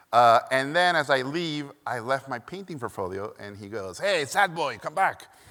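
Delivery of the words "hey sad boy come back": put-on strong, thick Hungarian accent. Quoting a man calling the speaker back as he leaves, in a thick Hungarian accent. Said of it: "And he was Hungarian, thick accent".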